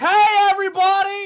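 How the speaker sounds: shrill, very loud, high-pitched shout. Answering a request to yell, greeting everybody: yelling really loud. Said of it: "Just yell really loud".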